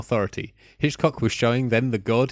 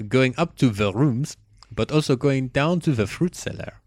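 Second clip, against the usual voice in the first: put-on German accent, much higher pitch; 2 semitones higher than usual. Speaker announces they're going German and keeps describing the scenes, in a German accent. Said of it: "I'm going German".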